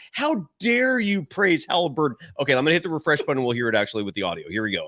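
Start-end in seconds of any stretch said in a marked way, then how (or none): 0.1-2.1 high, drawn-out, scornful, disgusted tone. Voicing a co-host on screen who looks disgusted: imitating disdain. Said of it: "has disdain for you right now".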